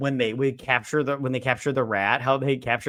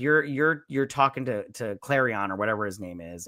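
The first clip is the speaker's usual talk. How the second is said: usual speaking voice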